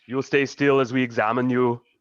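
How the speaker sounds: haughty, imperious, commanding tone. Voicing a spellcaster who orders the party to hold still: imperious tone. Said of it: "she says in this imperious tone".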